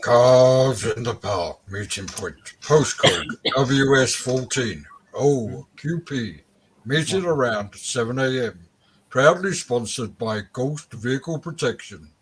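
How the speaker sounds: put-on deep, low voice. A co-host asks [name] to read out the meeting-point notice in a deep voice. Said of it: "Do it in a deep voice".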